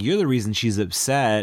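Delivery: normal talking voice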